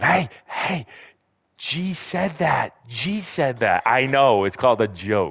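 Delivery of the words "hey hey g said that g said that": high, hushed half-whisper under the breath. Retelling what Maddie is half-whispering nearby: imitating Maddie half-whispering. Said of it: "Maddie's over here whispering, going".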